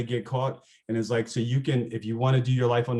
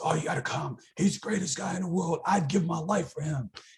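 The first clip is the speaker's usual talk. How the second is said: really raspy, rough-edged put-on voice, pitched up; 6 semitones higher, 3 dB quieter than usual. Retelling what a neo-Nazi student said to bring her along: imitating a raspy voice. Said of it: "He's got this really raspy voice".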